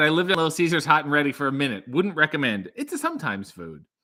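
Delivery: ordinary delivery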